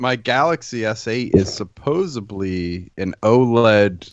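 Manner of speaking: normal talking voice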